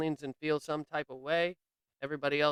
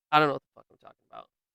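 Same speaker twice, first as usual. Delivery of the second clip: ordinary delivery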